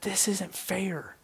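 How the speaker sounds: mock sobbing voice. Retelling how she reacted to studying the slave trade: imitating someone sobbing. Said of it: "She starts bawling, just sobbing".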